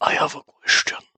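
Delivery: hushed whisper. Mouse, raising a question while the party plans its move, whispering. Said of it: "why are we whispering?".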